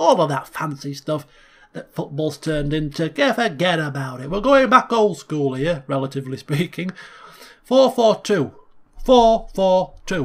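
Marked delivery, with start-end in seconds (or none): 7.7-10.3 put-on Yorkshire accent, higher, louder. A speaker lays out his old-school football formation, in a yorkshire accent. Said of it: "In the Yorkshire accent".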